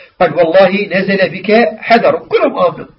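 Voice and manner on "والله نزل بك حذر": normal talking voice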